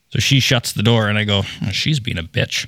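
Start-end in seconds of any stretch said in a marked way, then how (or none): 1.8-2.7 muttered under breath, much quieter. After she shuts the door, speaker retells muttering a remark about her, under breath. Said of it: "under my breath".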